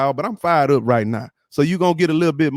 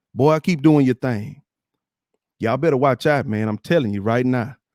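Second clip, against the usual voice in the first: ordinary talk, nothing marked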